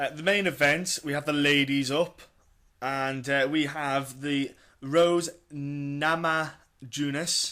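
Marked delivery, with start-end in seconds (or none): 3.5-7.5 slow, carefully spaced-out name. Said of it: "I'll say it slow 'cause it's easier".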